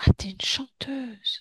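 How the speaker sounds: whispered, hushed voice.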